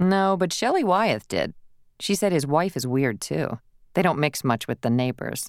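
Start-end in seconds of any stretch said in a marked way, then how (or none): none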